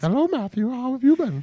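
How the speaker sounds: very high, shrill, loud voice. Revealing as the other speaker's aunt after removing a mask: playing an aunt. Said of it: "Sam, you are my aunt".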